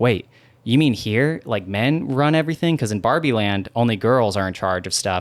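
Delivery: normal talking voice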